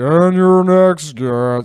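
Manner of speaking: very loud, booming, drawn-out, deliberately dumb announcer voice. Describing a talk show announcer: imitating an announcer's dumb voice. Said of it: "he's doing a dumb voice".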